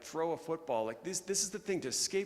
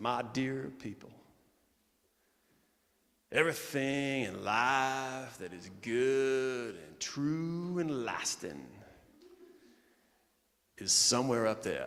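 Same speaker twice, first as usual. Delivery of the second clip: slight put-on Tennessee accent. Quoting John Maxwell's opening words to a quiet auditorium: slight Tennessee accent. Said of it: "a little bit of a Tennessee accent".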